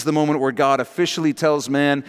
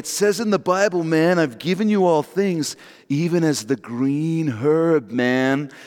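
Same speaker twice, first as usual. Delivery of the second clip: sixties hippie stoner voice. Quoting how Christians who smoke pot cite the Bible, imitating a stoner. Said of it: "every pot person you know talks like that".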